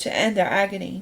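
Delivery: plain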